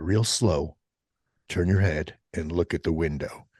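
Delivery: whispered voice. Retelling telling a child to look at an owl: retelling a whisper. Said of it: "I whispered to my kid".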